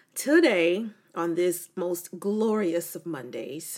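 a touch of dry, light sarcasm. Podcast host opening the show on a rainy monday, slightly sarcastic. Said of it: "that is a little bit of sarcasm".

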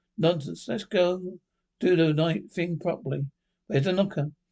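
ordinary delivery, nothing marked

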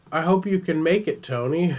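high, foggy, blank, dazed voice. Imitating someone who seems to have had a head injury, mock dazed voice. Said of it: "like I've had a head injury and I just don't remember anything".

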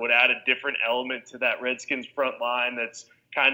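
plain

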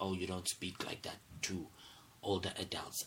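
usual speaking voice

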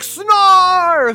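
mock very high, stretched-out, drawn-out shriek. Recapping the episode, Lion-O calls out, Lion-O screaming impression. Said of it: "he screams Lion-O".

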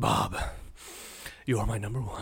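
playful comic-book movie villain voice. Quoting a favorite line from Batman eighty-nine: Joker voice.

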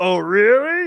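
very loud, high, belted-out squeal. Retelling a reply to a dad who hated the show: Pee-wee Herman voice.

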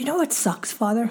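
normal talking voice

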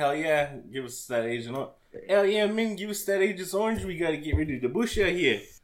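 put-on middling New Zealand accent. Joking with co-hosts, imitating people in a New Zealand accent. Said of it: "I get that New Zealand accent like a 5 out of 10".

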